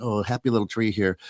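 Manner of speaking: put-on imitation of an AI voice. Retelling an AI video to friends: Bob Ross voice. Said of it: "They've got Bob Ross, and he's like".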